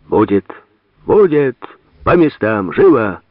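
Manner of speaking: loud high-pitched yelling. Gladkikh orders everyone back to their places: shouting. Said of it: "кричал Гладких".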